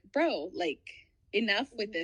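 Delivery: ordinary delivery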